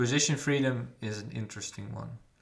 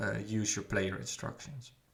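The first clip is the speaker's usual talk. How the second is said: ordinary delivery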